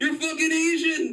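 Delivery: excited male voice yelling.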